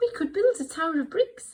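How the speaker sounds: squeaked up, small and high. Reading a story aloud, doing Little Bear's little high voice. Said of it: "Little Bear in his little high voice now".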